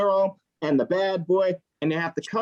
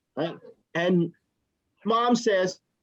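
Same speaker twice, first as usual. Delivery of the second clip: plain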